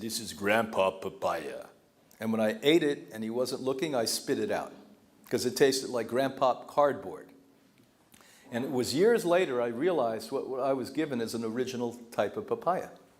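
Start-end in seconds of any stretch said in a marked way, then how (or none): 0.0-1.6 put-on Jamaican-accented delivery. Retelling what a friend said handing over a papaya: imitating a Jamaican accent. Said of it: "in his wonderful Jamaican accent said".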